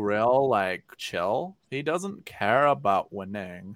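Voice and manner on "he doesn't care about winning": very slow, deliberate, drawn-out voice, every word dragged. Joking about a golfer who doesn't care about winning: Tringale's voice. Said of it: "That's Tringale's voice".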